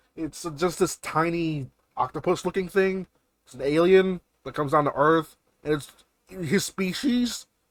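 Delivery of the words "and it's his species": cracking voice breaking mid-phrase, pitched up. Describing a tiny alien character to a listener, voice cracking. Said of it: "I have my voice crack again".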